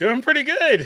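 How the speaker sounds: voice cracks and breaks up very high. A guest answers the host's greeting on a basketball show, voice cracking. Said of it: "a voice crack there".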